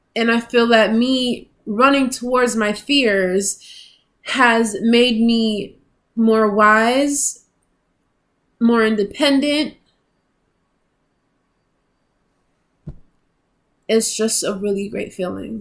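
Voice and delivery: crying while speaking, teary voice. Speaker reflects on running towards their fears, crying while speaking. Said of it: "I'm crying".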